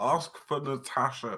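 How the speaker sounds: very loud, high shout. As he flies off to the store for spa treatment, shouting after him. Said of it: "I'm just going to shout".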